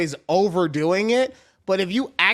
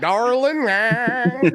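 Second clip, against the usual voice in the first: high-pitched, put-on Southern drawl; 5 semitones higher than usual. Imitating one's dad while talking about him: Southern drawl. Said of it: "I give him a fucking Southern drawl".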